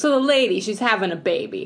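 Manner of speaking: put-on clumsy New York Italian accent. Retelling the nativity story for laughs, in a bad new york italian accent. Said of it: "I can't do that accent at all".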